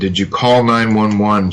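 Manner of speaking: plain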